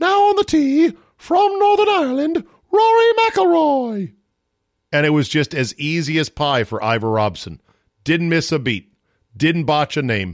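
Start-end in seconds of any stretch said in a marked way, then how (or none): 0.0-4.1 very high, called-out announcer voice. Imitating the Open Championship first-tee announcer calling a player: Ivor Robson voice. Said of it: "he had that high-pitched voice where it'd be like".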